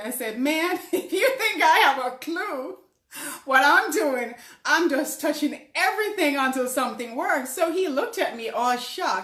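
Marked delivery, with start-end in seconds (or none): 0.4-7.5 mock talking through laughter, high and loud. Retelling own reply to a gentleman: retelling own words while laughing. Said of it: "I busted out laughing".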